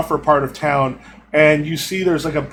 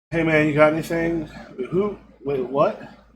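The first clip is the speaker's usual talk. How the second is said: dazed, spaced-out junkie voice; 4 dB quieter than usual. Voicing a dazed junkie with empty eyes: dazed junkie voice. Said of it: "sort of looks at you with sort of empty eyes".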